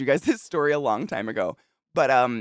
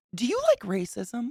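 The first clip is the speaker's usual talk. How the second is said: put-on very high, earnest, serious child sounding grown-up; 9 semitones higher, 4 dB quieter than usual. Retelling what a very serious eleven-year-old asked her, imitating a serious child. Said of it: "crinkles his eyebrows and looks at me like".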